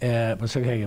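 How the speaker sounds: ordinary talk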